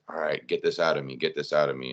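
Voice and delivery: ordinary talk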